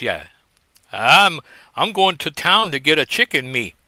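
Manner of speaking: put-on Cajun accent. Showing how people talk in a Cajun movie; put-on Cajun accent. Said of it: "where they talk like this".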